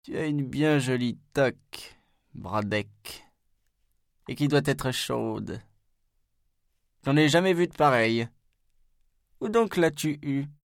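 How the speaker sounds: put-on high, bleating old-goat voice. Narrator reads Maître Knopf calling after Brodeck at the door, Maître Knopf's old goat voice. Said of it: "Sa voix de vieille chèvre".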